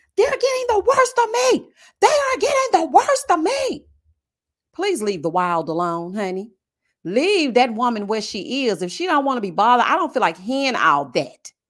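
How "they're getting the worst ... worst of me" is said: very high, screaming, complaining outburst. Retelling what a woman shouted at Will during a fight: retelling her scream. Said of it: "She starts screaming".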